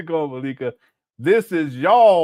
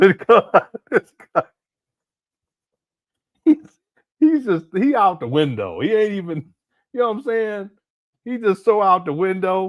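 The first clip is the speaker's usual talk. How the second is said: talking through laughter, higher pitch; 3 semitones higher than usual. Reacting to another speaker's odd remarks, laughing while talking. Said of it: "I don't mean to laugh".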